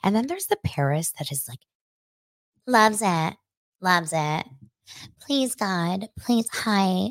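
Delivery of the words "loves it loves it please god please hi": put-on high-voiced, slow, drawn-out, gushing baby voice. Contrasting two ways of talking, imitating the second one: imitating Paris Hilton's baby voice. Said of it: "the high voice Paris, the baby voice".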